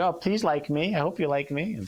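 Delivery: high, whiny, needy, pleading, mewling up-talk. Explaining how constant up-talk sounds, the speaker demonstrates: mewling up-talk. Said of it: "locked into that up talk... sound like this mewling little, you know, thing".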